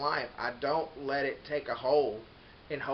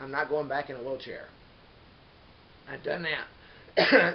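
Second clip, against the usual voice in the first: choked up with emotion, raised voice; 5 dB louder than usual. Recalling recovery after an accident, choked up. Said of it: "I get choked up about it".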